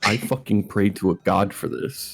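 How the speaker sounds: muttered under the breath. Retelling what another player said quietly: Will muttering under his breath. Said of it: "Will just under his breath".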